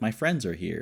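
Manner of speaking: usual speaking voice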